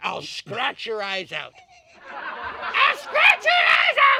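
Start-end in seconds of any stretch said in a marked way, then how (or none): 2.1-4.2 very high, wild, rising shriek. Describing her favorite form of self-defense: shrieking. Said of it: "I just shriek".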